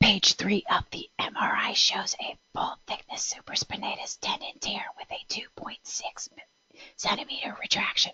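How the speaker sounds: pushed, effortful, very hushed whisper. Demonstrating whispered speech versus a low-volume voice: loud whisper. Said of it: "let me whisper loudly".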